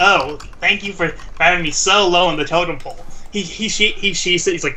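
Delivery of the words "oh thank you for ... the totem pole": ordinary talk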